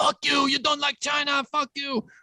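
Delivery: bad put-on Chinese accent, pitched very high. Doing an impression that the others call bad: bad Chinese accent impression. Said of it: "doing a bad impression".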